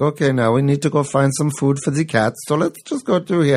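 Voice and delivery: fake high German accent.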